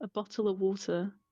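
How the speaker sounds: crisp British t's in "bottle of water". Saying a phrase for another speaker to hear: crisp british t's in "bottle of water". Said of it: "listen to all those T's".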